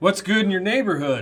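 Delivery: loud announcer voice. Giving the show's intro after the host asks for announcer voices: announcer voice. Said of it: "in your best announcer voices".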